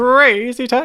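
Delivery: ridiculous, very loud, high-pitched voice. Asked by the other speaker whether they can do it, trying the Crazy Taxi voice. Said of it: "Do you reckon you can do it?".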